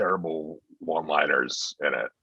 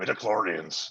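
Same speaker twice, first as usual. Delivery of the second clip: put-on movie-style Irish accent, higher pitch; 3 semitones higher, 3 dB quieter than usual. Answering a request to say a word as Liam Neeson: Liam Neeson voice. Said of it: "hear [name] do Liam Neeson and say midichlorians".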